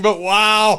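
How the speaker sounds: speaking through laughter. Reacting to a story of sound failing during worship, laughing while talking. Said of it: "I'm sorry I'm laughing".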